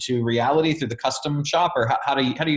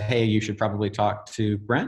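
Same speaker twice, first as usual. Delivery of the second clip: ordinary talk, nothing marked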